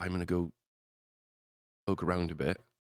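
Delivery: sneaky, hushed stage whisper under the breath. Playing a sneaking character telling the others quietly: half-whispering in character. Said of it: "he'll just kind of whisper".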